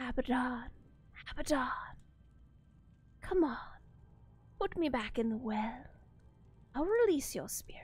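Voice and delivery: whispered creature voice. Voicing a thing that speaks to a player again, whispering. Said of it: "It whispers to you again".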